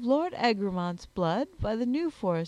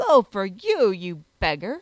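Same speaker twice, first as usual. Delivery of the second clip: loud, raised, exclaimed outburst; 4 semitones lower, 6 dB louder than usual. His lordship answers a man who calls his hunting hound slow, exclaiming. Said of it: "exclaimed his lordship".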